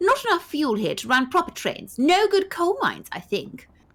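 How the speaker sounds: upper-class lady's voice. Reading a story aloud with a partner, voicing the young woman in a posh lady voice. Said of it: "I'll be a posh lady".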